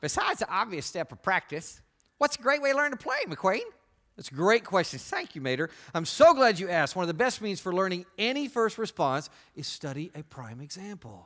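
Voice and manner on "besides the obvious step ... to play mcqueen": high-pitched, swooping cartoon-style voice. Speaker teaching a group, posing a question to McQueen, Mater voice from Cars. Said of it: "in your favorite Mater voice from the Cars movies".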